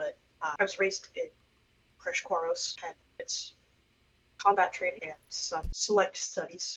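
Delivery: hesitant, halting, very quick delivery. Player answering in character as Reba about her upbringing, hesitant and very quick. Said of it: "Reba's gonna say this very hesitantly and very quickly".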